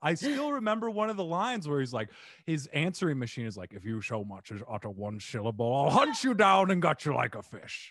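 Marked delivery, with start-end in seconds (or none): 3.7-7.9 deep, grouchy cartoon creature voice. Quoting a line from a movie character's answering machine, in a Grinch voice. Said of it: "you've been hiding this Grinch voice away".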